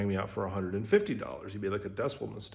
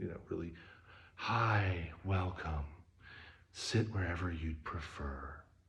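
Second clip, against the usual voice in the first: mellow, easygoing hippie voice, super chill, soft, slow; 3 semitones lower, 7 dB quieter than usual. Describing a vegan restaurant's hippie owner greeting guests, mimicking a super chill quiet voice. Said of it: "Super chill, like quiet voice".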